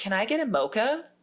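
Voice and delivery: careful fake American accent. Retelling repeating the order after being asked what: put-on American accent. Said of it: "I instantly say it in an American accent".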